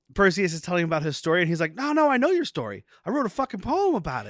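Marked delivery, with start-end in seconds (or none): 1.8-4.3 high, swooping, swinging put-on voice. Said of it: "going into a [name] voice".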